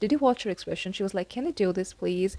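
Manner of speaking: ordinary talk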